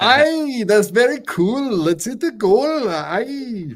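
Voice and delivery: very high, terrible put-on Irish accent. Speaker mocks another person's accent, imitating a bad Irish accent. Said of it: "You're terrible at accents".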